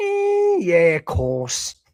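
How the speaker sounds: high, swooping, sing-song, drawn-out delivery. Teasing another speaker that they sound like Steven Gerrard: Steven Gerrard voice. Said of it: "you sound like Steven Gerrard going".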